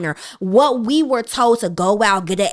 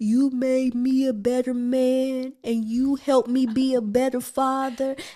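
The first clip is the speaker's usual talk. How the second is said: soft, choked-up tearful man's voice, drawn out; 4 semitones higher, 5 dB quieter than usual. Speaker acts out a groom at the altar reading his vows, imitating a crying groom. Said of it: "he's crying his little eyes out".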